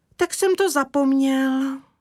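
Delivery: with a sigh. Kája answers his mother about a knot he tied, sighing. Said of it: "vzdychl Kája".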